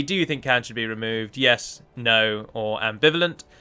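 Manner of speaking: ordinary talk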